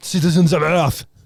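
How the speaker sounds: put-on French accent. Repeating speech lines after someone in the voice, offensively French accent. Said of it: "Sort of offensively French".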